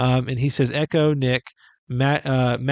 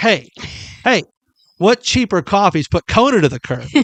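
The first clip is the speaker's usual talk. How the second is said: raised, high, affronted, indignant, offended voice; 6 semitones higher, 6 dB louder than usual. Reading a commenter's question about a coffee video aloud, mock-offended. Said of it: "I'm going to choose to read it as like a, a he's offended".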